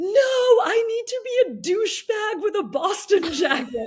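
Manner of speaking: mock very high, shrill, defiant screaming. Retelling being pulled off a race course by medics, imitating own screaming. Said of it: "I started screaming".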